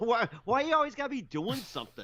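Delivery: high, fast mock whine through laughter.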